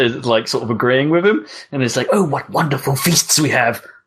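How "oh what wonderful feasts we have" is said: mock over-eager, enthusiastic, gushing guide voice. Describing a character who likes to embellish, imitating his enthusiastic talk. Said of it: "talking enthusiastically".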